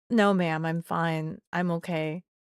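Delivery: put-on calm, flat monotone voice. Retelling your reply to a woman who wants to call the cops: mock-calm monotone voice. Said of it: "in the most calmest, like most monotone voice that I could".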